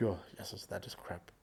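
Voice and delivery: muttering under breath. Describing his sarcastic remarks while walking away from camera; muttering under breath. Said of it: "a lot of things I would say under my breath".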